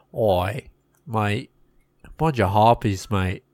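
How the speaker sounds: bad, fake Australian accent. Pitching a silly story about harpies, trying a bad australian accent.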